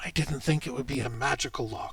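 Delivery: hushed, surprised half-whisper, caught off guard. Voicing a character who half-whispers to the player in a tabletop game, half-whispered. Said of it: "And he whispers to you".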